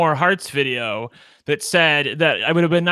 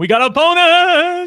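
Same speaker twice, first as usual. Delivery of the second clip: put-on excited talk-show host voice, higher and louder; 12 semitones higher, 6 dB louder than usual. Imitating another speaker's occasional voice: Oprah voice. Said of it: "your Oprah that comes out every".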